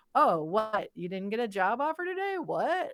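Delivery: put-on sarcastic teasing, swooping pitch. Retelling how a dad teased about job offers: imitating dad's sarcastic teasing. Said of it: "he started saying it in a more sarcastic way".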